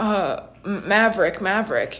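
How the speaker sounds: put-on reluctant child voice, slow, halting, stumbling start. Retelling a kid's answer to a question: imitating a kid reluctant to talk. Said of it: "acts like he really doesn't wanna talk".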